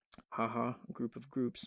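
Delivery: sarcastic tone. Narrating a software tutorial to viewers, sarcastic.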